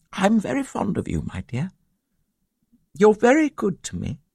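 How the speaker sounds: gentle, tender voice. Narrator reads an older woman replying to a younger woman, speaking gently. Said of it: "She said gently".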